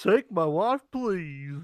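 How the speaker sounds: silly comedic put-on voice. Joking around with friends online, doing a goofy Rodney Dangerfield impression. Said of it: "why is your Rodney Dangerfield a goofy imitation".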